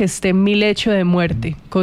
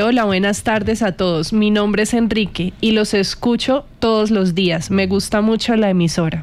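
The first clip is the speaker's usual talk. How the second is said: plain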